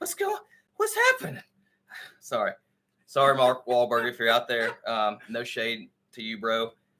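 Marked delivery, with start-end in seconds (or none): 0.0-1.4 very high pitch, sounding completely lost and confused. Imitating the actor as always confused: confused Mark Wahlberg voice. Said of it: "he's always confused".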